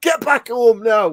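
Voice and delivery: mock shrill, very high shouting. Recounting a film scene where an actor shouts at another: Brian Glover shouting. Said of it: "It's the way he shouts at him".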